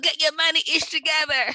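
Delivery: mock, shrill, very high, loud scream. Podcast host recalling how they yell at listeners: retelling own yelling. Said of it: "hearing me talk and scream and yell".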